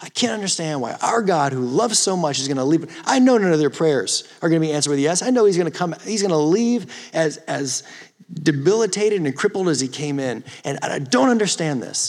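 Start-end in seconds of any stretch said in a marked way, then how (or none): none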